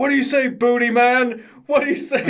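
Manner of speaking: dead-serious tone. Retelling a referee asking a wrestler in a submission: imitating the ref, deadly serious. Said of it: "but deadly seriously".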